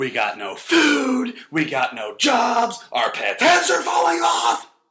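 very high sing-song comic voice, "food" stretched. Repeating a movie quote for a guessing game: Jim Carrey voice. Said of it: "I'll say it like he says it".

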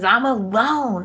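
anguished, tearful, high-pitched pained cry. Retelling a soap scene where a character screams.

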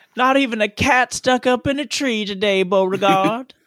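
put-on southern accent character voice. A character sitting on the porch in a scene, southern character voice. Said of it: "I love my southern character sitting on the porch".

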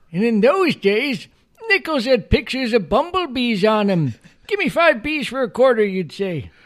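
belted out high, pitch swooping wildly. Asked for any other voices before you leave, try your old man Simpson voice. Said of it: "I got my old man Simpson voice".

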